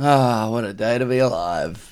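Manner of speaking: mock mournful, slow lamenting sigh. Imitating the other speaker's line about the day: imitating a lamenting tone. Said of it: "some sort of lament in your voice".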